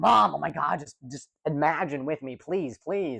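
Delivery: angry, begging plea, kept soft. Retelling how she begged her mom as a kid, acting out angry pleading. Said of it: "I would get so mad at my mom".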